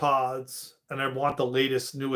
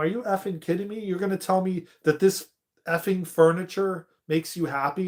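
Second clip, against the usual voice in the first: mock angry outburst, pitched much higher; 5 semitones higher than usual. Speaker retells an argument with him over carpet and furniture; retelling an angry outburst. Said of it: "I lost it".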